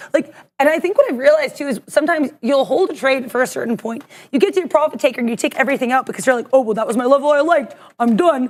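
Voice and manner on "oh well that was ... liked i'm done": offhand, unplanned movie hero voice. Acting out a trader who takes all profit at once: Rocky Balboa voice. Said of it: "I don't know why I sound like Rocky Balboa".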